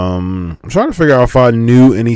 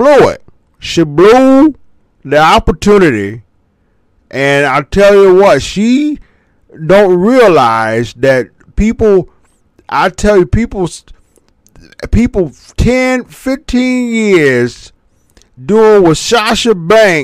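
high, put-on blend of two character voices, ranting; 9 semitones higher, 4 dB louder than usual. Commenting on Sasha Banks blowing her opportunity: Tony Atlas mixed with Charles Barkley impression. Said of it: "Tony Atlas mixed with Charles Barkley".

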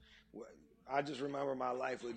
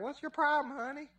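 put-on loud old southern grandma voice, pitched very high; 5 dB louder than usual. Retelling a woman on the phone who fixed their problem, old Southern grandma voice.

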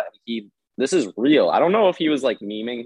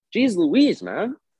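said in a very high, pitched-up voice; 10 semitones higher than usual. Repeating a line someone said, imitating Alex saying it. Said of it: "He sounded like Alex when he said it".

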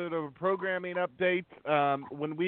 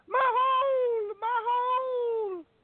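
mock very high wail, "hole" stretched out; 3 dB louder than usual. Retelling how she fell and started screaming: imitating someone screaming. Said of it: "started screaming".

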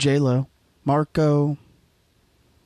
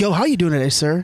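plain

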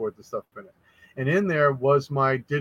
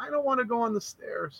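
put-on very high, sweet, soft tiny toddler voice; 10 semitones higher, 6 dB quieter than usual. Retelling a recorded talk with two-year-old Winter, in her sweet little voice. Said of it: "you hear her sweet little voice".

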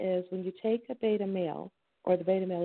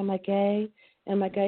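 plain

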